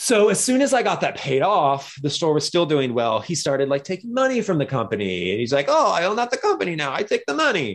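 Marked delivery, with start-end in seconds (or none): 5.7-7.7 high, worst-sounding bad Italian accent. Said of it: "it was my worst Italian accent".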